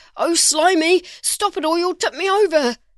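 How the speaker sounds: wavering, wobbly shout, high-pitched. Reading a story aloud, a character shouts as his boat tips, wobbly voice. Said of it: "shouted Noah with a wobbly voice".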